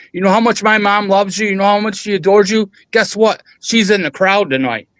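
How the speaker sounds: put-on high-pitched yelling. Refereeing a match, the speaker retells cornering a wrestler: retelling a yell. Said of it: "and I'm yelling at him".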